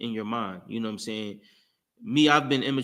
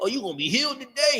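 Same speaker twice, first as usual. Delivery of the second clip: mocking, making-fun tone in a higher voice; 13 semitones higher than usual. Retelling laughing at the pastor in church: retelling mocking the pastor. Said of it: "We be in the back just joking on everybody".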